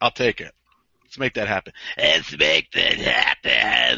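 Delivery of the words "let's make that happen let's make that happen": very low, deep growl. Agreeing to a requested match, doing a Luna Vachon impression. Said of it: "That's my Luna impression".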